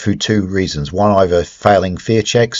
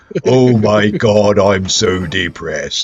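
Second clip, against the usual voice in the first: slow, gloomy, utterly despondent robot voice, drawn out. Comparing a drained character to a manic depressive robot: Marvin the android voice. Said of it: "the manic depressive robot".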